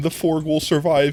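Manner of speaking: usual speaking voice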